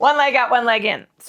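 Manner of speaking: sudden loud, high-pitched shout. Speaker giving exercise cues, suddenly shouting. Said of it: "And I don't know why I'm shouting".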